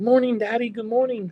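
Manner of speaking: put-on very high, bright, eager, excited little-kid voice. A father describes his three-year-old waking each morning, imitating excited three-year-old. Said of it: "He wakes up and he's like so excited".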